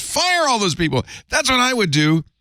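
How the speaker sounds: very high-pitched, in-your-face, demanding screaming. Retelling how someone told him to fire everyone: imitating someone screaming. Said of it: "screaming at me in my face".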